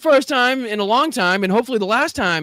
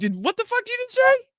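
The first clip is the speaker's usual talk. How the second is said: very high, confused, disbelieving tone; 12 semitones higher than usual. Retelling a reporter's reaction, imitating a confused reporter. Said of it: "confusion in the reporter's voice".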